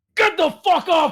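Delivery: very high-pitched, shouted yell. Voicing a character cursing at a downed ally: yelling. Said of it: "you just hear dude yelling".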